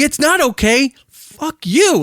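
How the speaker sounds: acted furious scream. Retelling screaming at a smiling driver through the car window, a furious scream. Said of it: "It's like I'm screaming".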